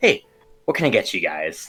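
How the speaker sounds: put-on older orc woman character voice. Voicing an older orc woman who comes to take the group's order: voicing an older orc woman. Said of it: "an older orc woman just, like, uh, uh, walk towards you guys. She says".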